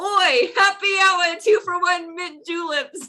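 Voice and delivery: very high, unexpected, drawn-out yell. Voicing a character calling into a crowd: yelling in an unexpected voice. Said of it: "in a voice you didn't expect her to say".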